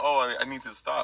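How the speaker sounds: ordinary talk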